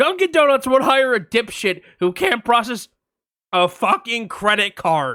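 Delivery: loud, shouted, yelled outburst. Retelling a dispute with a restaurant worker, retelling a yell. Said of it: "I yelled".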